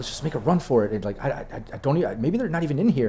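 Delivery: tense, hushed, half-whispered arguing tone. Describing voices heard from a room, acting out their half-whispered arguing. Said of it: "just slightly like whisper arguing".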